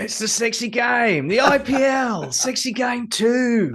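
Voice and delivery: very high-pitched, loud voice. A panelist, asked to announce tomorrow's game again, does a Danny Morrison impression. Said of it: "can you do it in Danny Morrison's voice again".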